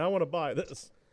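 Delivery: mock crying, put-on. Retelling walking up to a Goodwill cash register, acting out own past crying. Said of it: "Walk up to the cash register crying".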